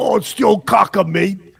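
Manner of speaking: clumsy, badly done British accent. Claiming he could sound like anybody, the speaker tries a bad british accent. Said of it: "attempt uh, of a British accent?".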